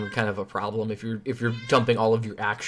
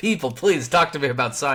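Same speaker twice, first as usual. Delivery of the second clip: ordinary talk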